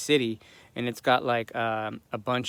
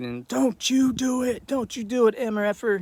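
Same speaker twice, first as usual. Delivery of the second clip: mock scream, much higher pitched; 11 semitones higher than usual. Retelling a confrontation with a man, re-enacting screaming at him. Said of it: "screaming at him".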